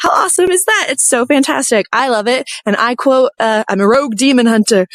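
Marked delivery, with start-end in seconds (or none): none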